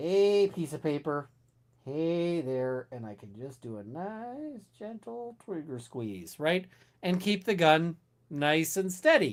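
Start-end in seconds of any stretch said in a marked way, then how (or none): 0.0-2.9 totally relaxed, super calm, easygoing voice. Describing shooting paper targets while calm, greeting the target in a super calm voice. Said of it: "let's say I'm super calm".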